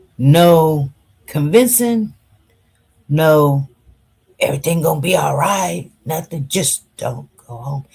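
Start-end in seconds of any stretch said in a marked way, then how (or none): 6.5-7.9 gentle, loving, soft, low, hushed voice. Retelling what someone told the speaker, in a soft voice. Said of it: "In a soft voice".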